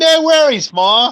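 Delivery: very high-pitched put-on Australian accent. Discussing a movie, speaker quotes the kid character imitating his Australian accent. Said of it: "slips in and out of that that Australian accent".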